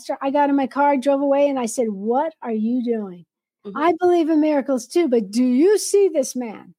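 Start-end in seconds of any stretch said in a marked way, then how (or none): 1.9-6.5 angry, acted-out tone. Retelling words spoken in anger at the pastor, retelling an angry challenge. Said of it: "I got so mad at him".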